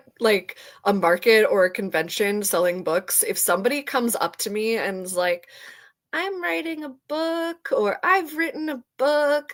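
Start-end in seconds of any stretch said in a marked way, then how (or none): 6.1-9.5 timid, small, slightly higher-pitched voice. Describing would-be authors who approach at a book market, imitating a timid voice. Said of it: "I'm using this voice because they're always like very timid".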